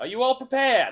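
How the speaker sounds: loud professor voice. Voicing a professor welcoming students to an arena: loud professor voice. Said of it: "you hear a loud voice of your professor going".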